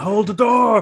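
high-pitched, very loud, shrill, full-force scream. Joking about someone at a door with an idea: imitating a scream. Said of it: "they're just screaming".

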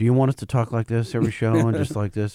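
fake, low, deadpan, monotone drone. Answering a listener's one-star review, talking in a put-on monotone. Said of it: "just monotone?".

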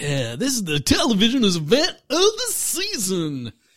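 swooping movie trailer narrator voice. Imitating the announcer from a TV trailer just played: imitating the trailer announcer's voice. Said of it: "I love that guy's voice. He's like".

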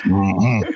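low, grunting put-on impression voice. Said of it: "Sling Blade?".

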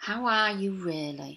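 calm, slow, soft voice. Showing how to ask someone a second time: calmer, slower, turned-down voice. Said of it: "notice how my voice changed a bit there".

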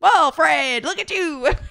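put-on loud, high, old-fashioned newsreel-style reporter voice. Imagining how Freddie's friends once teased him: old-timey newspaper reporter voice. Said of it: "Like an old-timey newspaper reporter?".

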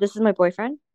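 plain

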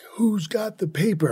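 demanding, high-pitched yelling. Retelling how an inmate walked the day room: imitating someone yelling.

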